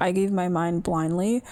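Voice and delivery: ordinary talk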